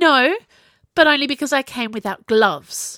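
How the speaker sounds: loud, huffing, huffy tone. Ziggy answers Kai, who wants to argue, huffing. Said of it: "she huffed".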